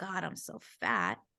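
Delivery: low mutter under the breath, as an aside. Acting out looking at her tummy unaware her daughter hears: imitating muttering under her breath. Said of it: "I just under my breath".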